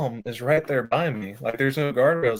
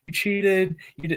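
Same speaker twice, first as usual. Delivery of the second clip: mock child voice, high-pitched heckling yell; 6 semitones higher than usual. Telling how a kid at the guardrail yelled at him, retelling a kid yelling. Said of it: "he's just yelling at me like".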